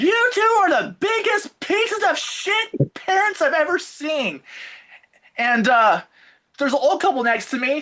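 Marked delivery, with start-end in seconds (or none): 0.0-4.4 very high, furious angry shout. Retelling jumping up in a movie at a child's parents: imitating himself yelling. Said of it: "I jump up and I yell".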